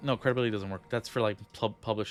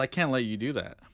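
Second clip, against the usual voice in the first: firm, commanding, authoritative tone. Imagining how the partner they are leaving would respond, imitating an authoritative tone. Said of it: "he says it in a more like authoritative tone".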